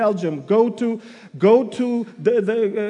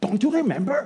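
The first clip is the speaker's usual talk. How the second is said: imitation Hebrew accent; 4 dB quieter than usual. Preaching on 2 Thessalonians, the speaker imagines Paul: Paul in a Hebrew accent. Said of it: "In that Hebrew accent".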